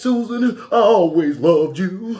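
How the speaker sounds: very high, loud, blubbering fake sobbing. Retelling how he pretended to be the husband, imitating someone crying. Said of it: "And he start to cry".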